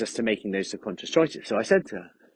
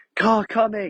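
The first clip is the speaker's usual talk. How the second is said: high, loud, sudden aggressive yell; 11 semitones higher, 6 dB louder than usual. Recounting shouting something a second time, re-enacted loud aggressive shout. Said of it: "I shouted it a bit more loudly and aggressively".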